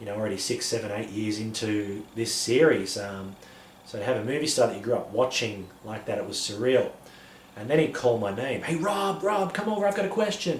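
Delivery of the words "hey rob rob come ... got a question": clumsy, fake American accent, very high pitch. Retelling how a movie star called over: very bad American accent. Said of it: "a very bad American accent there".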